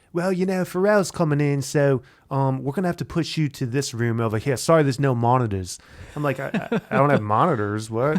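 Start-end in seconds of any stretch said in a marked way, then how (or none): 0.1-5.7 put-on British accent, higher pitch. Retelling what a british a&r man told him at a session, imitating a british accent. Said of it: "British A&R dude telling me like".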